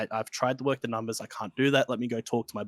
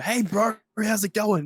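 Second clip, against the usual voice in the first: high, full-volume shout at the top of the lungs; 9 semitones higher, 4 dB louder than usual. Explaining how not to greet an old lady who comes in: shouting at the top of voice. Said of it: "at the top of my voice go".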